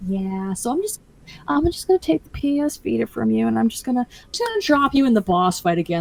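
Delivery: apologetic, sheepish, awkward, halting hedging. Retelling a tester lead taking the console back: imitating a sheepish tone. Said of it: "very sheepish".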